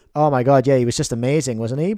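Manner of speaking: gushing fake praise with plain, heavy sarcasm. Playing a sarcastic version of oneself interviewed in a booth: acting sarcastic. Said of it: "Sarcastic me, uh, is coming into the booth now".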